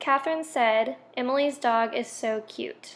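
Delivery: ordinary talk, nothing marked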